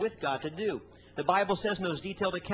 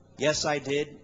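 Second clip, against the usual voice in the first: flat, mechanical, low robotic monotone; 4 semitones lower, 4 dB louder than usual. Retelling a woman's answer at the altar after the service, imitating a robotic monotone. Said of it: "she said very robotically".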